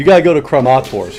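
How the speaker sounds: ordinary delivery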